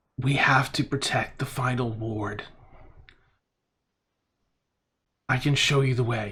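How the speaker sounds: voice echoing, layered three or four times over. Narrating a voice the listeners hear, echoing multi-layered voice. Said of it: "a voice that's almost repeated three, four times over".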